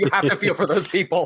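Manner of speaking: talking through laughter. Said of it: "I'm laughing because I know".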